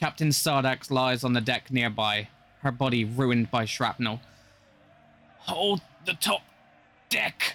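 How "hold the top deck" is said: high-pitched dying snarl. A narrator voices the dying captain's order: Captain Sardax snarling. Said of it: "she snarls with her dying breath".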